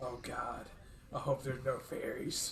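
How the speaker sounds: whispered aside, hushed, under the breath. Speaking in character to Winston during a game: whispering. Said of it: "whispers to Winston".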